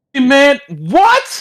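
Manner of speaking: screaming in disbelief. Reacting to hearing that magazines are gone: screaming in disbelief. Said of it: "Why are you screaming?".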